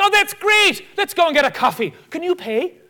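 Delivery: put-on Irish accent. Retelling what a man who came up to him said, put-on Irish accent. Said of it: "this guy comes up to me with his Irish accent".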